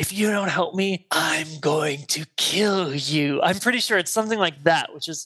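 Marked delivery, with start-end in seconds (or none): 0.0-3.4 slow, eerie, creepy, menacing voice. Retelling a scene where Camp grabs an older man and won't let go: imitating Camp's creepy voice. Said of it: "says in this really creepy voice".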